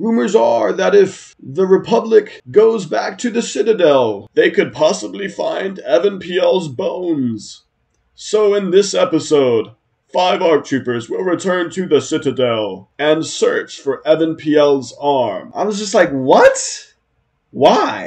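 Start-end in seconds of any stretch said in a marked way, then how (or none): 0.0-15.5 program-opening narrator announcer voice. Mocking an imagined new episode's opening narration, Clone Wars announcer voice. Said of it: "the announcer voice guy at the beginning comes on and he's like".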